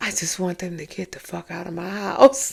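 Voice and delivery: half-whispered under the breath, hushed. Quoting someone who spoke to another person: imitating a half-whisper. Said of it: "and she whispering".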